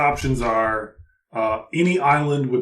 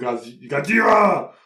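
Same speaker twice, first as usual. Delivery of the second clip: imitated monster cry; 2 semitones higher than usual. Imagining walking around with hands in the air, shouting like a monster. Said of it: "walk around with my hands in the air and go".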